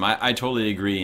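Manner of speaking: ordinary talk, nothing marked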